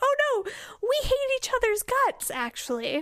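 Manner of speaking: bright, sunny, very high-pitched cheerful chirp. Describing how others admit they despise each other, the speaker mimics them: mock-cheerful retelling. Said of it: "just cheerfully say".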